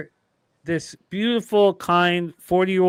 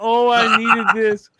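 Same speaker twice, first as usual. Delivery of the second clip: laughing and sobbing at the same time; 4 semitones higher, 3 dB louder than usual. Retelling what a crying woman kept saying to Peter, imitating sobbing laughter. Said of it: "You remember she's sobbing, laughing".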